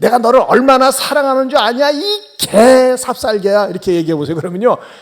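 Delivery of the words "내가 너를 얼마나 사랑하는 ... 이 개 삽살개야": loud, harsh raised voice that sounds angry. A pet owner talks to their dog in a loud, angry-sounding voice. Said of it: "큰 소리로 얘기하면요. 좋은 얘기도 화나는 것처럼 들려요".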